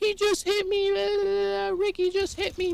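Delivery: mock tearful, very high, slow sobbing crying voice. Retelling a school fight, the speaker quotes the girl who was hit, imitating a crying girl. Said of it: "The girl's crying".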